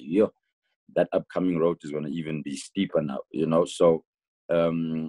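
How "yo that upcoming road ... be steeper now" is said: ordinary delivery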